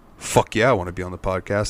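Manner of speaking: put-on quiet, soft voice. Retelling a friend accepting an invite to the podcast: imitating Chris, real quiet. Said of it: "he gets real quiet".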